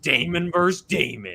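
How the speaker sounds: epic cinematic movie trailer announcer delivery. After asking for the trailer voice, the speaker announces the matchup in a deep movie trailer voice. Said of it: "I need the deep trailer voice".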